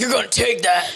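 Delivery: put-on, mock manly voice. Joking about what a dick's voice would be: put-on man voice. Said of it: "like, a man voice".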